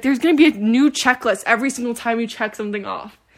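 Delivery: ordinary delivery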